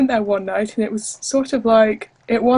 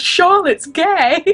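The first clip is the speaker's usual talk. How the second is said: mock teacher voice, high, raised yell; 8 semitones higher, 3 dB louder than usual. Retelling how a teacher in the hallway mixed up names: imitating a teacher yelling. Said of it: "so he yells".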